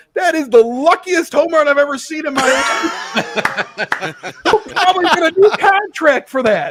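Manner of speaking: put-on high, drunken crowing with words spilling through laughter. Retelling what a drunk woman said after a home run, imitating a woman laughing. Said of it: "And she's laughing her ass off".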